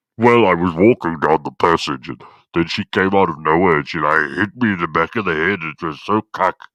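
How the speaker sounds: put-on altered voice imitating a voice-effect distortion. Speaker mimics how hidden people sound with a vocal effect, imitating a distorted voice. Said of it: "they usually put like a um a vocal effect on their voice".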